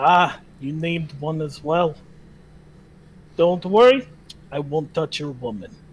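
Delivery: low put-on hill dwarf character voice. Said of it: "He is a hill dwarf, / He is a stout red-headed dwarf with a passion for ingestible poisons. / He pays you no mind as he puts an application on the table".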